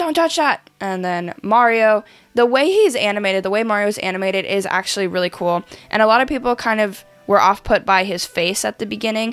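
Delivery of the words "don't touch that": very high, squeaky squeal in total panic. Retelling a movie trailer line as Toad: imitating Toad freaking out. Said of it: "freaks out".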